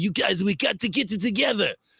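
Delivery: Belgian-accented English, pitched way up, put-on. Speaker imagines a player yelling in the locker room: english belgian accent. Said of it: "that was my English Belgian accent".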